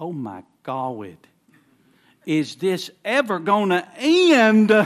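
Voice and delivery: very loud, very slow, high little country drawl. Retelling a man's remark at the end of a service, little country voice. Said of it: "he had that little country voice".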